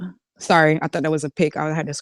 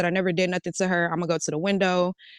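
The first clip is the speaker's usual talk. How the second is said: normal talking voice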